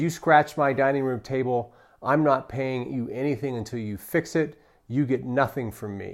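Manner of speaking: mock angry voice. Talking about dealing with customers, the speaker quotes a customer, mock-angry. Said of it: "Very angry".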